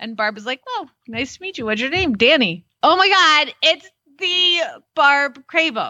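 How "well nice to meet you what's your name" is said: fast, flat, dry, expressionless deadpan delivery. Retelling how Barb answered a girl who came up to her, imitating Barb's deadpan. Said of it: "Barb's kind of deadpan".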